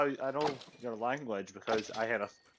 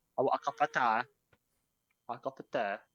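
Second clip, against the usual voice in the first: exaggerated, overdone British accent. Prompted by the others to say it again like a Brit: overdone British accent. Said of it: "Now you're just trying too hard to be British".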